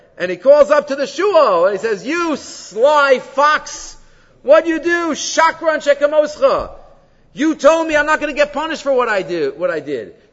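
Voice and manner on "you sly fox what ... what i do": play-acted, furious, screaming, roaring lion voice. Telling a fable where a trapped lion yells at the fox: screaming, roaring lion. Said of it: "he starts screaming, and he starts roaring".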